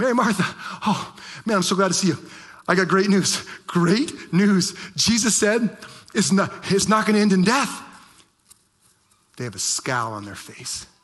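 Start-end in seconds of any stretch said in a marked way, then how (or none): 0.0-7.8 play-acted, all-excited outburst, pitched up. Retelling a servant who runs back with news: acting out an excited servant. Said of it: "all excited".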